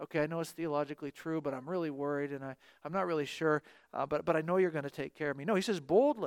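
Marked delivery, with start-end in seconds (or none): 0.0-5.4 put-on timid, hesitant, quieter, lower pitch. Explaining a response meant to be said boldly, the speaker is acting timid and hesitant. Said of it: "I would be much more likely to timidly say these things".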